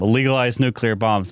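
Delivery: plain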